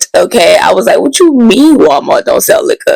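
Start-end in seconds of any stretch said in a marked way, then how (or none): 1.0-3.0 high-pitched, shocked, can't-believe-it disbelief. Retelling finding no liquor at Walmart in a dry county, acting out shocked surprise. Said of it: "the look and surprise on my face, I was gagged".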